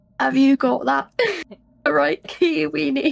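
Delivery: loud, clumsy, poor attempt at a manly voice. Finally asking the question in a scene, in a bad impression of a man. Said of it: "my poor impression of trying to be sound like a man".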